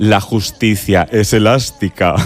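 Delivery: low, deep, wicked villain voice. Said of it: "decía así con voz de muy mala, malísima".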